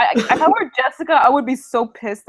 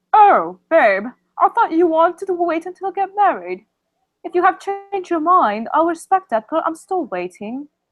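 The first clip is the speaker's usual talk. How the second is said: put-on British accent with higher pitch; 6 semitones higher than usual. In an improvised scene, playing a girl answering her partner, in a british accent. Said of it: "your British accent is so hot".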